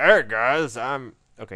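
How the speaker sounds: badly done, slow, booming voice. Speaker pictures Stromberg sitting there greeting everyone: bad Stromberg impression. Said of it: "That's a bad Stromberg impression".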